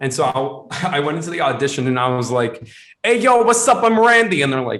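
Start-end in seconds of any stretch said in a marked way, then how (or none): 3.0-4.4 shrill, very loud, high put-on Boston accent. Retelling his audition for a Boston role, the speaker does a Boston accent. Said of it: "some kid had a Boston accent".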